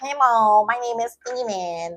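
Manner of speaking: slow, nasal voice, talking through the nose. Showing how somebody could talk through their nose: talking through the nose. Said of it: "Somebody could talk through their nose".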